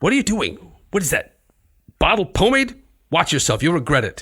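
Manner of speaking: angry character voice. Performing a play scene as Euripides, angry Euripides. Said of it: "Euripides just gets angrier and angrier".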